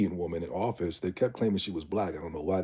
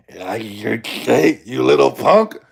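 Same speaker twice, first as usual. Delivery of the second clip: very loud, very slow, drawn-out monstrous rasp; 5 semitones higher, 14 dB louder than usual. Retelling a caller's insult: imitating a monstrous voice. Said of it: "like this monster came out of her voice".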